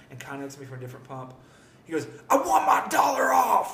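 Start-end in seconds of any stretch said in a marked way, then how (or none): 2.3-3.8 very loud, shrill, high, drawn-out scream. Speaker imitates a man at a gas station pump; retelling a loud shout. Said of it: "Literally like that, loud as anything".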